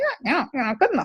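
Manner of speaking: quick, high-pitched squeak. Show how a miniature Donald Duck says the sentence, in a bad squeaky Donald Duck impression. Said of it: "I'm not a good Donald Duck impersonator, but he says something like".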